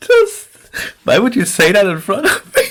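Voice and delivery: talking through laughter. Reacting to another player's remark, laughing while talking. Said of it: "I got tears in my eyes".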